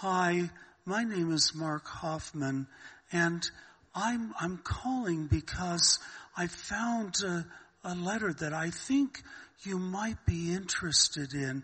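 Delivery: soft, innocent, charming aw-shucks con man voice. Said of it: "really kind of an innocent, "Oh, golly, gee, shucks," uh, attitude".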